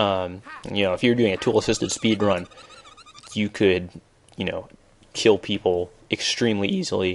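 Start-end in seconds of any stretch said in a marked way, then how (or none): 5.1-7.1 voice cracks, quieter and slower. Explaining tool-assisted speed runs, the speaker's voice cracking. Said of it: "My voice just cracked".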